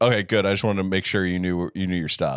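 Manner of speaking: flirtatious with mean undertone. Retelling what a man on the train said to a woman: imitating mean flirting. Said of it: "meanly flirtatious".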